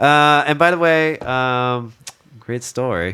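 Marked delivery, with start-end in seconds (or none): 2.4-3.1 dry sarcasm, quieter. Responding to a story someone just told: sarcastic. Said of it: "that was sarcastic".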